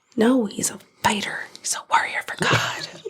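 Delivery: whispered, dripping with sarcasm.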